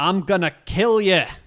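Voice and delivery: slow, high, drawn-out put-on Scottish accent. Acting out a manga villain's line as read: put-on Scottish accent. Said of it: "I was reading him as Scott".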